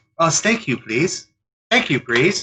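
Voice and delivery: mocking, high, fake Chinese accent. Retelling how a waitress kept repeating herself, imitating the waitress. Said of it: "she would do it again".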